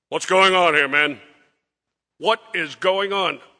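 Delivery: loud, stern officer voice.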